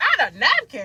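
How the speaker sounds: exasperated, very loud, high, annoyed disbelief. Retelling a drive-thru with no napkins: imitating grandmother annoyed. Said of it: "my grandmama was so annoyed".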